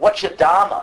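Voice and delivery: put-on Brooklyn accent. Showing students how a question sounds in brooklyn: brooklyn accent. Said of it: "you imagine in Brooklyn".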